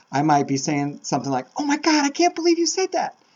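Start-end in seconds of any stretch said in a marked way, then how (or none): 1.5-3.1 excited voice shooting up very high in pitch. Explaining how pitch shows feelings, demonstrating their own reaction in a high-pitched voice. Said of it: "my voice goes up high".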